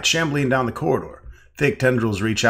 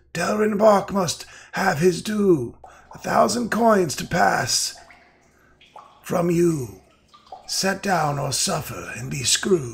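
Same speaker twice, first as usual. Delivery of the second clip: clear, sibilant, hissing voice, slow and high; 7 semitones higher than usual. Reading aloud the words of an unseen voice in the game: clear sibilant voice. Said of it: "clear, sibilant voice".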